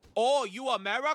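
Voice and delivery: high, put-on, exaggerated Chinese accent. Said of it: "I don't know why I'm doing a racist voice now either".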